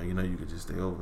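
slightly acted deep voice. Switching into what a listener calls the little deep voice. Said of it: "the little deep voice".

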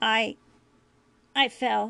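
stammering. Jake answers Julian's question, stammering. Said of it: "Jake stammered".

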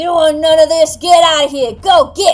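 gruff angry shouting. The narrator voices a character shouting at wolves: angry gruff shout. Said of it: "angrily shout at the wolves ... with a weird gruff tone".

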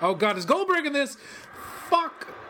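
exasperated outburst.

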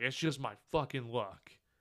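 put-on angry outburst. Retelling a driver's reaction when another car swerved around him, mock-angry. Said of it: "why are you so angry".

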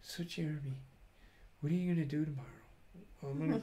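soft, hushed voice. Retelling how a man talked to the speaker, imitating his soft voice. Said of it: "he started talking in a soft voice".

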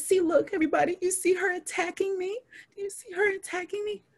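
play-acted, very high, tearful crying voice. Retelling how a coworker started crying and accused her. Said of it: "she starts crying and she's like".

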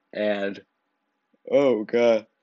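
talking through a yawn. Describing a school skit about a teacher, breaking off while yawning. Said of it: "Sorry, I just yawned".

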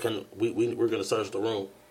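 plain

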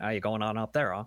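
put-on New England accent. Describing how people talk farther upstate, imitating it; New England accent. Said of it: "it's more New England-y. You get some more of that".

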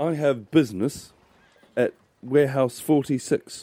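regal, lordly, important voice, high and swooping. Player voices a monk striding over to a teamster at the docks, regal businessman voice. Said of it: "of a regal business head".

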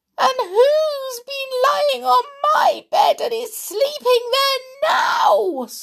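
squeaky, very high, thrilled, excited voice. Reading the Goldilocks story aloud, as Little Bear, in a squeaky Little Bear voice. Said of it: "squeaked Little Bear in the greatest excitement".

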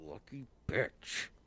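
muttered under breath. Narrator voices a character after a losing charisma roll: muttered under breath. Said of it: "You hear him mutter under his breath".

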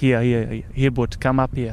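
put-on South African accent. Retelling a story, quoting a man in a South African accent. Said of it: "great South African accent".

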